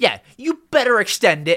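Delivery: high, demanding, entitled tone. Speaker jokes that they sound like a Karen, Karen voice. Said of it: "maybe I sound like a Karen".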